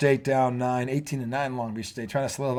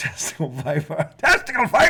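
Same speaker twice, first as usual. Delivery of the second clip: imitated yell, pitched higher; 8 semitones higher, 4 dB louder than usual. Retelling how the old man in A Christmas Story yelled at the boiler: imitating someone yelling. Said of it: "He yelled out".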